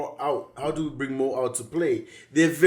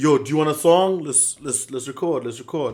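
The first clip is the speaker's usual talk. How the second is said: ordinary talk, nothing marked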